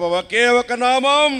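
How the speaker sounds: said out loud, high and proclaiming.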